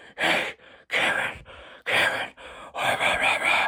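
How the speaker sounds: hushed, small and mean whisper. Imitating the guys who attack through broadcasts: imitating little whispering mean voices. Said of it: "do little whispering mean voices".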